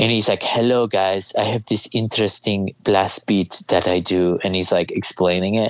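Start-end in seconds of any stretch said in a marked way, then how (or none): 0.4-4.4 put-on Scandinavian metal guy voice. Retelling what a Scandinavian metal guy says, doing a Scandinavian metal guy impression. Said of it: "He's like a Scandinavian metal guy".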